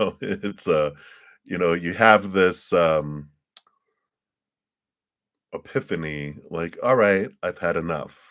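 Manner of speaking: emotional, choking up partway through. Speaker talking to listeners about having an epiphany, choked up. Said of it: "It's just choking me up talking about it".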